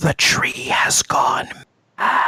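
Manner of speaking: hushed whisper, close to the listener's ear. Narrating a figure who leans in to the listener's ear, whispering. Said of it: "leans in like to your ear to whisper".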